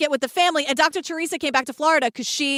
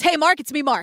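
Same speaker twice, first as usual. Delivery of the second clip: ordinary delivery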